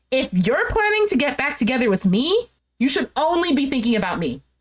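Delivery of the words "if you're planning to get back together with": plain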